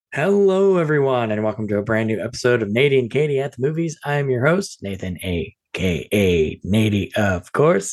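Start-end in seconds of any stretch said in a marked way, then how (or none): 4.0-7.9 robotic, droning voice like a robot. A podcast host introduces himself at the top of an episode, sounding like a robot. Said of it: "I don't know why I sound like a robot just then".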